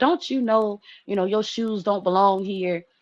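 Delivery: put-on, exasperated, irritated scolding tone. Retelling getting mad at the kids for not cleaning up: imitating own yelling. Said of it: "I'm yelling".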